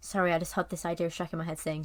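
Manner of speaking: ordinary talk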